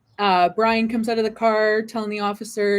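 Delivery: ordinary talk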